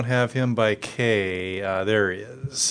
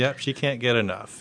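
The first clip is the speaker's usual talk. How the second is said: ordinary talk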